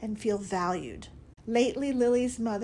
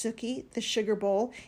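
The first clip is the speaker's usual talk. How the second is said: ordinary delivery, nothing marked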